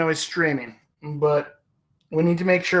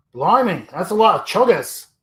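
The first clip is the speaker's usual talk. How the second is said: playful put-on Australian accent. Joking about the word chugga, then trying a put-on Australian accent. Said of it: "imitate an Australian accent".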